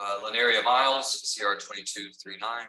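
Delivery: loud calling out.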